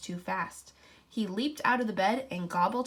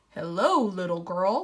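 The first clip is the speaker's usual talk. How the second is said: deep, loud, growly wolf voice; 5 dB louder than usual. Reading a fairy tale, the wolf greets a little girl in the forest, deep, growly wolf voice. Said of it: "said a deep, growly voice".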